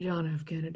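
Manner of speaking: low, deep, manly voice. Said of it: "JFK looks like a manly man".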